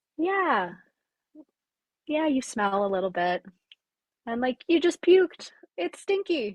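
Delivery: gentle, loving, caring tone. Retelling a loving inner voice heard during a ceremony: imitating a tender, kind voice. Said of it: "tender, kind voice and energy".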